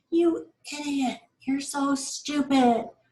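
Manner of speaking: scolding, critical tone. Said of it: "it was more like".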